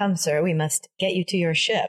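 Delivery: dry, flat, expressionless deadpan delivery. Imitating the evil one's lines, deadpan Christopher Guest delivery. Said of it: "Every line he's delivering is just like".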